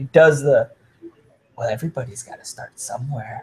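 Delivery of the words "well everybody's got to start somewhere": low, quiet, soft little character voice. Recounting a killer's line to the other killers, the speaker does a little Joker voice. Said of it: "he does it in that little Joker voice".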